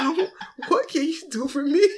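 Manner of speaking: trembling, shaky, nervous voice, soft and high. Retelling a conversation about owing taxes, imitating own shaky nervous voice. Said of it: "My voice all shaking".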